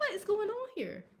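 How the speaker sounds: exasperated, alarmed tone.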